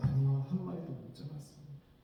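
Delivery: weary voice laced with despair. Voicing the exhausted disciples' reply after a cold night: acting out a despairing answer. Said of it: "절망 섞인 목소리로".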